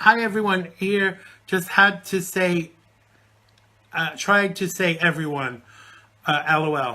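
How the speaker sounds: usual speaking voice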